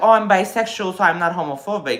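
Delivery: ordinary talk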